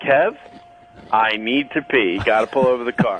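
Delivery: plain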